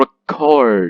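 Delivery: record with -cord stressed loud and clear. Explaining weak and strong syllables: stress on second syllable of record. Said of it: "Chord is pronounced loud and clear".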